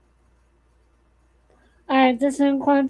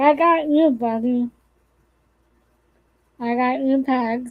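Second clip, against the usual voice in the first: normal talking voice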